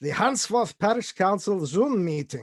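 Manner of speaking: put-on Russian accent drifting into German. Reading out the meeting title to the group, in an attempted Russian accent. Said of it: "I should do it with a Russian accent".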